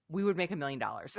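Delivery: plain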